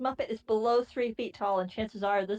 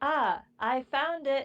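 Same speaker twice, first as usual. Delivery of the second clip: put-on very slow, level, droning announcement monotone; 4 semitones higher than usual. Retelling what he said on finding it, flat tone raised and projected. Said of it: "still in the flat tone of voice he's been using so far, but raised to be louder, as in projecting".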